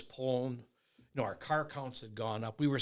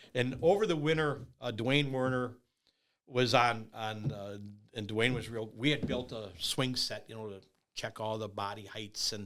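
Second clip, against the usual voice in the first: ordinary talk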